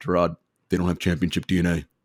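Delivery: put-on super deep baritone voice. Speaker retells Shaq's reply to his playoff question: Shaq impression, super deep baritone. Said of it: "in like his super baritone, deep voice".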